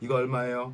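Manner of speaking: flat robotic monotone with no intonation. Recalling how they used to talk like a robot: flat robotic monotone. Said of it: "로봇처럼 얘기했었어요".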